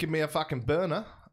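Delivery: put-on Australian accent.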